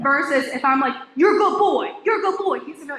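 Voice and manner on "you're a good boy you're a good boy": sharp, harsh, high-pitched scolding shout. Showing how tone changes meaning when praising a dog: yelling. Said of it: "Why are you yelling at me?".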